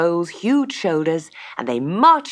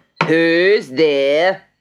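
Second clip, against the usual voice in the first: growling voice; 5 dB louder than usual. The farmer, hearing a loud knock during dinner, calls out, growling. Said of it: "he growled".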